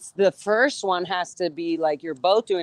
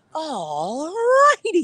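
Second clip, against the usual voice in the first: "alrighty" stretched out, very high, swooping pitch; 10 semitones higher than usual. Showing another speaker an impression on camera: Jim Carrey "alrighty then" impression. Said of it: "That is definitely Jim Carrey".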